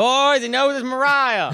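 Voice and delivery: put-on very high-pitched, genuine Southern accent. Retelling a call from a producer named Stucky: imitating Stucky's Southern accent. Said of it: "He's got a real Southern accent".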